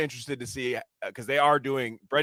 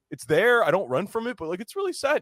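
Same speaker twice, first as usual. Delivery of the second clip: high, heartfelt, emotional voice; 9 semitones higher, 3 dB louder than usual. Retelling an interview where the guest confesses: imitating Simon Rex getting emotional. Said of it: "getting emotional".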